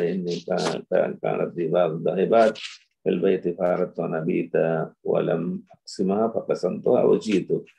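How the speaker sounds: ordinary talk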